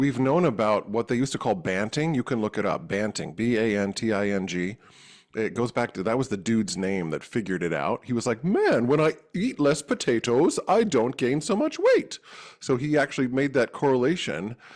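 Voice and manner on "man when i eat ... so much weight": put-on British accent, pitched up. Explaining the history of banting, quoting the man behind it, British voice. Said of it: "that was my British voice".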